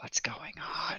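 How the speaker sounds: hushed whispered aside. In a tabletop role-play, a player character whispers over to Nella, whispering. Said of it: "I whisper over to Nella again".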